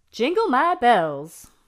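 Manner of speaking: southern-sounding voice. Recording a buzzer sound for a game: southern accent. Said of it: "Sounded very southern there".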